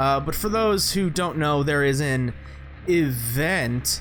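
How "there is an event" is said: sarcastic, drawn-out "event", as if in air quotes. Announcing that there is an event, with audible air quotes on event. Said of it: "I hope you can hear those air quotes in my voice".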